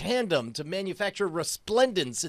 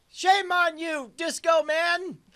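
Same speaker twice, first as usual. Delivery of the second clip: high, slow mock shout. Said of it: "I start shouting".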